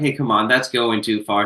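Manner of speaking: ordinary delivery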